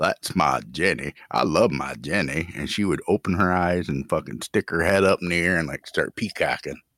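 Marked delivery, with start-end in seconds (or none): 0.0-2.5 slow, unhurried, drawn-out film-character voice. Retelling talking to a pet lizard: Forrest Gump voice. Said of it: "start talking in my Forrest Gump voice".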